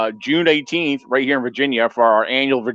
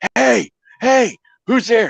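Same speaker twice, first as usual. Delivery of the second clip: put-on, very high calling-out shout; 10 semitones higher than usual. Recounting calling out in the fog when the spotlight failed, retelling a yell. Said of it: "I'm like yelling".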